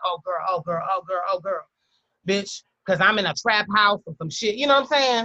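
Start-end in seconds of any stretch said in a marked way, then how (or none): none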